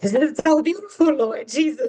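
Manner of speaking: overcome, emotional voice, gushing with feeling. Retelling own reaction at an engagement dinner: imitating own emotional gushing. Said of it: "I was emotional".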